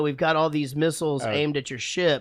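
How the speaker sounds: usual speaking voice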